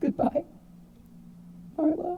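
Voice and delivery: high voice breaking into whimpers. Voicing a dying character's last words, in a whimpering, broken voice. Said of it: "he whimpers and, and in a broken voice says his last words".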